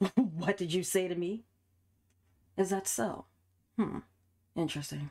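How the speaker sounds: patronizing, condescending tone without real anger. Performing Ruli's part, a condescending Ruli line rather than anger. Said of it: "it wouldn't be much anger. It would just be like a condescending tone".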